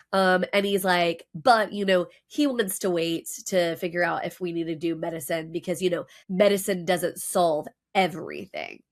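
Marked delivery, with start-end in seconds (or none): none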